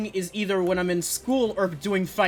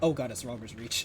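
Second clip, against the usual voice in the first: quiet, flat, unalarmed deadpan delivery; 10 semitones lower, 8 dB quieter than usual. Repeating a character's line while mocking it: imitating a quiet line without shock. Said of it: "there was no shock in that voice line".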